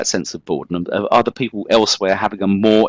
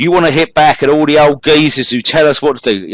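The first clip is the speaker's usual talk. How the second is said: loud, high, put-on London accent; 7 semitones higher, 5 dB louder than usual. Quoting a Mods and Rockers participant from a book, in a London accent as John Braden. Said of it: "hope you like my, my marvellous uh, kind of uh, London accent there".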